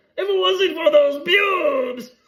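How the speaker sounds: slow, loud, high-pitched squeal. Imitating a coach caught by pubes, Scooby-Doo villain voice. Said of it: "it's like the Scooby-Doo villain".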